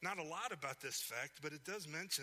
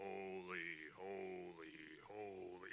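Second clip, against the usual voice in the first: dull, lifeless, flat droning monotone; 9 semitones lower, 6 dB quieter than usual. Showing angels praising without passion: droning monotone. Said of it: "kind of droning on".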